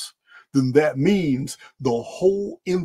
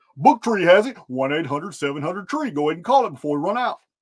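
hard-sell car salesman sales pitch patter; 3 semitones higher than usual. Plugging a book that Book Tree sells, in a car salesman voice. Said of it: "I'm going to go ahead and sound like a car salesman".

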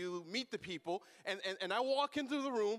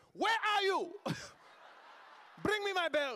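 put-on angry scolding voice, higher; 10 semitones higher than usual. Retelling a mother scolding a child before the phone rings: imitating mom's angry house voice. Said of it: "a house voice".

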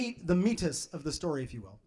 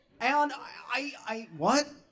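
normal talking voice

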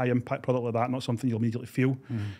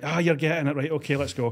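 put-on, lightly sarcastic, mock-encouraging tone; 4 semitones higher, 4 dB louder than usual. Retelling what gets said to the audience about applause: imitating own sarcastic tone. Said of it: "I kinda go a bit sarcastic".

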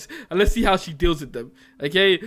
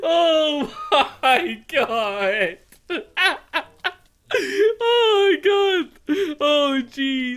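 very drawn-out, high, slow words through laughter; 9 semitones higher than usual. Streamer laughing at something in the game, laughing. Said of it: "am I evil for laughing at this?".

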